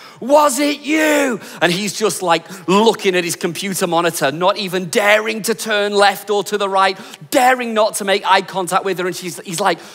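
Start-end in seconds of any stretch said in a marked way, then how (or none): 0.2-1.4 high, accusing, in-your-face shout. Telling a story of a teacher confronting his best mate, retelling her shout. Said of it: "she's like shouting at him".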